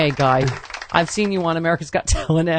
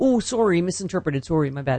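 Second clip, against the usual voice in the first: put-on polite, apologetic Canadian accent. Retelling Canadians apologizing in a Twitter fight, in a Canadian accent. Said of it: "That's a good Canadian accent".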